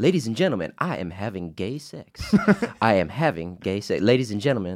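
put-on rhythmic preacher-like speaking cadence. Showing how a speaker's cadence sounds around the house: imitating Doctor Umar's speaking cadence. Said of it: "doing the cadence".

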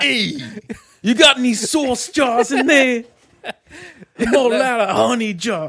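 put-on very high voice with an Italian accent. Voicing an Italian version of the honey-jar bear: Italian Pooh voice. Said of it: "he's like an Italian there now".

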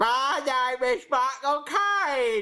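high, slow mocking imitation voice. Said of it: "That's what you sound like".

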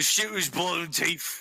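put-on thick, heavy Cockney accent. Showing how Middle Earth orcs talk: heavy Cockney accent. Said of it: "Orcs talk more like these. Heavy Cockney accent".

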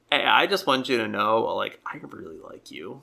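ordinary delivery

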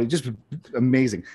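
ordinary delivery

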